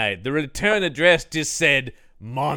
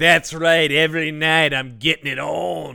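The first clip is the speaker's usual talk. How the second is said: unconvincing, inexperienced-sounding voice; 2 semitones higher than usual. Mocking a movie character's brag about his love life: imitating Durkin talking like a guy who's never had sex. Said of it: "he's talking like a guy who's going like".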